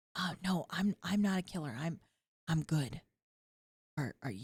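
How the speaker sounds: hushed whisper. Talking to someone in a library, whispering. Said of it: "we're whispering".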